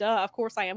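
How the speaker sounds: ordinary delivery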